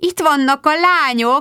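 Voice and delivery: high, delighted, rejoicing joyful exclamation. At a garden party, a woman spots the girls arriving and calls out, rejoicing. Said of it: "örvendezett Magda".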